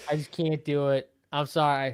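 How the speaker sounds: ordinary delivery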